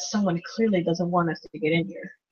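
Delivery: muttering under breath. Voicing a character who finds the tunnel caved in: muttering under breath. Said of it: "I just mutter under my".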